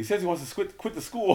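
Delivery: high, screamed-out, hollering voice. Retelling a chat with Tony that mom overheard: imitating mom screaming. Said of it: "My mom screams out".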